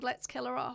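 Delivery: ordinary talk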